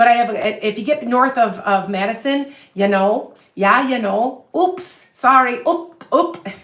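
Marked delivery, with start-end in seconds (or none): 2.7-6.5 Upper Peninsula Michigan accent. Explaining the accent north of Madison, putting on a Yooper accent. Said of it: "That's just a Yooper".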